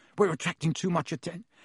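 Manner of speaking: plain reading voice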